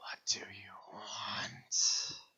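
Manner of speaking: hissed, breathy whisper. Voicing the woman-figure as she speaks to the others, hissing. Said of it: "and it hisses".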